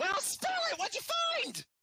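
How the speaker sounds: loud, very high, swooping, brash, eager loudmouth blurt. Voicing the loudmouth of the crew leaning forward eagerly: loud, energetic crew member. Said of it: "The energetic, uh, a loud mouth of the crew".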